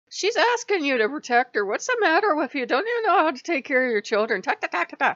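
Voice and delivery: high, loud, fast scolding in Irish accent.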